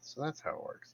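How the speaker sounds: whispered mumble, muttered under the breath. Speaking in character as a sigil moves to a new weapon: mumbling under breath. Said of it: "mumble under my breath".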